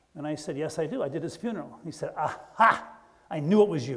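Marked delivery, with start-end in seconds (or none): 2.2-4.0 heavy Irish brogue, drawn out. Retelling what a man said to him at his truck, in a heavy Irish brogue. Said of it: "this guy with a very serious Irish brogue".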